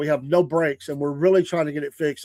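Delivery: ordinary delivery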